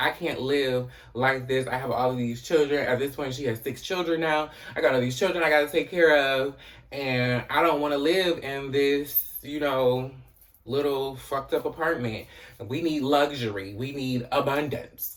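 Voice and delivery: plain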